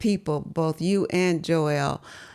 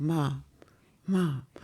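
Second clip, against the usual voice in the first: really soft, gentle, careful, hushed call; 3 semitones lower, 5 dB quieter than usual. Recalling being woken while dozing at the wheel, the speaker imitates their child; real soft voice. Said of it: "You were like this real soft voice".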